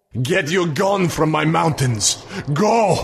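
high, thunderous, booming vampire shriek that cracks. A vampire, having flung a youth aside, drives the group off: booming, cracking shriek. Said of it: "its voice cracked and boomed like thunder".

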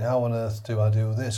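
ordinary delivery

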